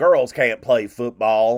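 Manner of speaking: loud put-on Southern accent, crusty old man voice. Imagining an old-school coach refusing the speaker's daughter: put-on southern accent. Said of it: "I gave dude Southern accent".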